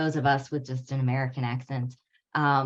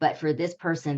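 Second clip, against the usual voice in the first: usual speaking voice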